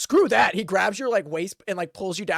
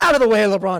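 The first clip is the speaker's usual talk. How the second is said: loud, stocky dwarf character voice; 5 dB louder than usual. Narrating a scene, voicing a dwarf who pushes someone aside; [name] dwarf voice. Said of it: "you see like a stocky dwarf with a beard".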